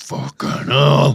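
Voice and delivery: put-on suggestive moan. Showing what noise to make on a log flume: mock sexual moan. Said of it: "Like that".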